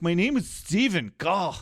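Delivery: short, curt snap-back retort. Retelling how Connor answers his father: Connor impression. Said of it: "And Connor's like".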